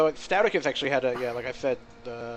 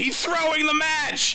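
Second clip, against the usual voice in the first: put-on shrill, very high, full-throated scream; 3 dB louder than usual. Retelling a cast of a playoff game, imitating someone screaming. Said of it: "you just screamed".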